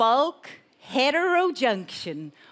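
very slow, drawn-out, deliberate, careful delivery. Speaker repeating a technical term for listeners: saying it slowly. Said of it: "I'm going to say it slowly again".

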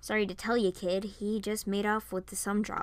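ordinary delivery

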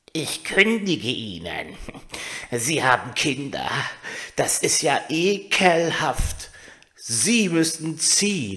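slow, spiteful, venomous, angry voice. Narrator reads a story; the toadstool evicts the mouse mother: spiteful toadstool voice. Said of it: "Sie sitzen im Moos und sehen furchtbar geärgert und giftig aus. / Klein und dick und unangenehm. Und das war ein Giftpilz. Giftpilze kommen immer so etwas unvermittelt ans Tageslicht. Sie sind eben da".

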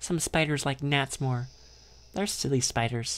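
ordinary delivery, nothing marked

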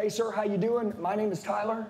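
friendly, approachable, personable tone. Showing Tyler how to greet someone at their door, a more personable greeting. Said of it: "Is that more personable?".

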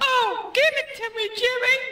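very high-pitched put-on woman's voice. Doing an impression on stage: impression of my wife. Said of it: "Here's my impression of my wife".

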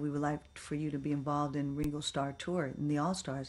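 ordinary delivery

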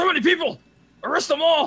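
loud shouting. Shouting an order to arrest them all: very loud. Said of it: "You're so loud".

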